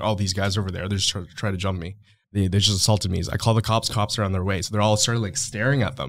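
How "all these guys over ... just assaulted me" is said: plain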